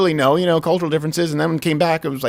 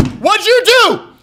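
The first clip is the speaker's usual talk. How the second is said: very high, loud, slow, drawn-out demanding prosecutor voice. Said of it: "I just go".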